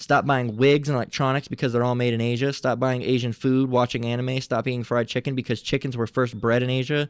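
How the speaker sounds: ordinary delivery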